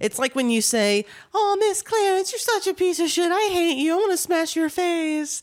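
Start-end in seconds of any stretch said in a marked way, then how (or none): 1.3-5.4 very high-pitched, saccharine, sugary sweet tone. Imitating how Sam talks to her, mock-sweet voice imitating Sam. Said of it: "you say it in that sweet voice".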